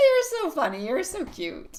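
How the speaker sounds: very high, swooping, giggling through the words. Host reading a viewer's email aloud, laughing while talking. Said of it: "I'm sorry, I'm laughing".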